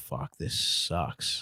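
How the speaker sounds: low, slow, soft defeated sigh and groan.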